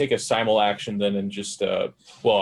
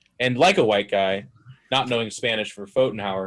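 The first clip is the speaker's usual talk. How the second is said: normal talking voice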